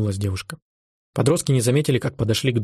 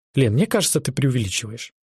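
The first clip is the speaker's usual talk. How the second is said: ordinary delivery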